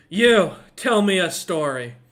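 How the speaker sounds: put-on very loud, words slurred drunkenly. A man heavy into his cups turns to the pebble: slurring his words. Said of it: "as he's slurring his words".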